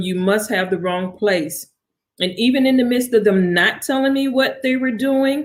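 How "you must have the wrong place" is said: usual speaking voice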